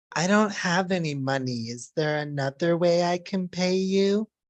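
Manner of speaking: slow, pervy, insinuating and suggestive tone. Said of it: "I need you to repeat exactly this tone".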